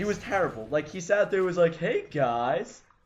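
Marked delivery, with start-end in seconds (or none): 1.8-2.8 mocking, imitated sarcastic tone. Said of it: "totally sarcastic".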